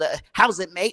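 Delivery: put-on London Cockney accent. Mimicking the guys with Cockney accents, Cockney accent. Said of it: "the guys with the Cockney accents".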